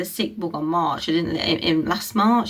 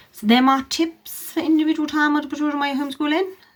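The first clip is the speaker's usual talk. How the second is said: very fast, high rattle, rushed at top speed; 8 semitones higher than usual. Wrapping up homeschooling tips for parents before asking them to subscribe, very fast. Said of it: "See how fast I could say that then".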